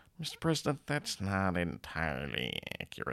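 extremely nasal, hushed voice squeezed through the nose. Retelling an Independence Day scene, the Secretary of Defense answers the president, very nasal. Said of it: "in the most nasal voice you've ever heard".

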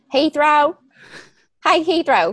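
loud, high-pitched, rural-sounding American Southern accent. Joking about naming a firstborn Heathrow, saying it in a southern accent. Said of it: "if you say it like in a southern accent".

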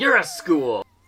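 put-on high, loud child's shouting voice. Recounting a scene where a kid shouts at his mom: retelling a shout. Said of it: "and he shouts".

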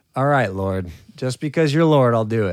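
loud, condescending, indulgent tone. Speaker retells Peter answering Jesus about the nets: mock-condescending. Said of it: "just totally condescendingly".

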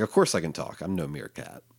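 mock-sarcastic tone. Retelling a comic panel where the talking cat answers the sorcerer: retelling a sarcastic line. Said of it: "sarcastically licking his paw".

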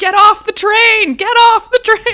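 very loud, very high, stretched-out booming shouting. Retelling how everyone on the train yelled at tourists: imitating people yelling. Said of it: "all of us just yelling".

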